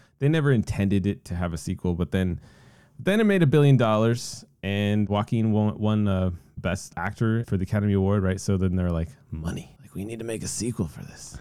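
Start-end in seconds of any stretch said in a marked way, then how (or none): 9.3-11.4 full cartoon crab character voice. Retelling what they said about making a sequel: Mr. Krabs voice. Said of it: "Mister Krabs from SpongeBob".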